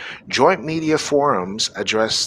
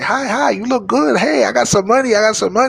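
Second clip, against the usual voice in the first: very high-pitched put-on male voice; 10 semitones higher, 5 dB louder than usual. Acting out a man flirting with a woman and offering money: imitating a Chinese man. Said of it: "Chinese man go to the woman say".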